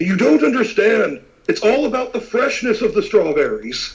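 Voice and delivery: heated, insistent, high-pitched shouting. A man in the guild slams his hand onto the table and yells. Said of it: "kind of slams his hand onto the table and yells".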